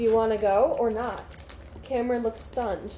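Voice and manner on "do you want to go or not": normal talking voice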